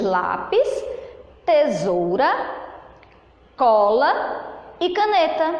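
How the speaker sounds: slow, with a pause after each item. Teacher showing pauses in a sentence, pause after lápis, tesoura, cola. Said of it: "de um objeto para o outro a tia deu uma pequena pausa".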